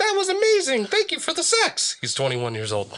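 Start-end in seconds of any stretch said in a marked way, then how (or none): 0.0-2.0 squeaky, very high, silly put-on puppet voice. Reading a post where he made his penis talk: put-on voice for a talking penis. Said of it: "I had to add a voice".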